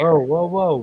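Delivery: ordinary delivery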